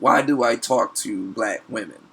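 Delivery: plain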